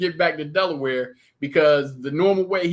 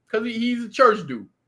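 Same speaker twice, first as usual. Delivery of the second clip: plain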